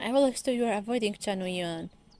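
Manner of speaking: usual speaking voice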